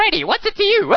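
very high, loud, rude, snarky ventriloquist-puppet voice. Talking about ventriloquist puppets, doing a rude ventriloquist dummy voice. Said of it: "they always have these bad attitudes".

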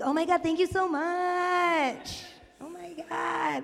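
mock high, enthusiastic gushing, "much" drawn out. Retelling thanking a woman who was very enthusiastic, mock-gushing to match her. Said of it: "I'm like a chameleon".

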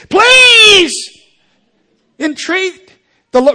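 very loud, shrill, high-pitched, emphatic shouting. Speaker reading a bible verse aloud to an audience, stressing it: loud emphatic plea. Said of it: "I didn't mean to wake that".

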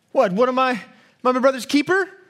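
mock slumped, sulky, sullen, grumpy teenage attitude. Retelling a brother's reply when god comes looking, mock-sullen, grumpy tone. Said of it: "with that kind of sullen, grumpy tone".

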